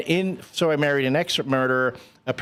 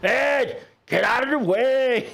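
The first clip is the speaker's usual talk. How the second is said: put-on Scottish accent, yelling, pitched higher; 11 semitones higher than usual. Retelling a movie scene, imitating Mike Myers' Scottish father character yelling. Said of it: "Mike Myers' character yelling at me from behind".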